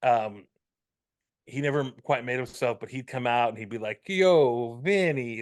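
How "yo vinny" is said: fake Italian accent with a lisp. Recalling a comedian's bit, the speaker does the fake Italian voice with lisp. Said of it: "he'd do an Italian voice, and it was so, and he had a huge lisp".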